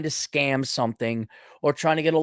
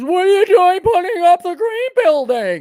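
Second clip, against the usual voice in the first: put-on very high-pitched, shrill, swooping older boss voice; 8 dB louder than usual. Complaining about work instructions, the speaker acts out the boss: imitating a baby boomer boss. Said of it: "That's my baby boomer boss impersonation".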